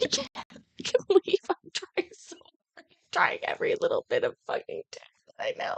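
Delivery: crying with laughter. Failing to exit a program despite trying everything: crying with laughter. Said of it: "I'm still crying".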